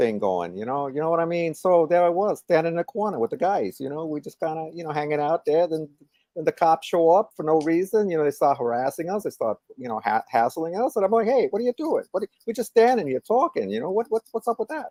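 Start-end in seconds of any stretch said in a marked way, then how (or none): 1.5-14.9 relished, put-on New York street accent. Telling a story about cops hassling the guys on the corner, in a new york accent. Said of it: "enjoying that New York accent".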